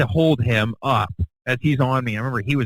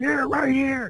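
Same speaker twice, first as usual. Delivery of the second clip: put-on crowd-like shouting, higher pitch; 13 semitones higher, 3 dB quieter than usual. Retelling a crowd pointing out a girl to security: imitating crowd shouting.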